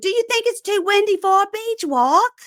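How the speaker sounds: put-on shrill, very high yell. Retelling how one woman yelled at another on a windy beach: imitating Dorit yelling. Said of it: "Dorit yells at Eileen Davidson".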